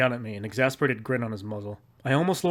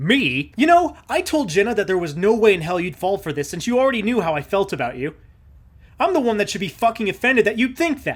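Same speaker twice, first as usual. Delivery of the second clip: furious, angry tone with pitch raised; 8 semitones higher, 7 dB louder than usual. Reading a story, a man whirls on the narrator and answers angrily. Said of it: "he looks almost as angry as I am".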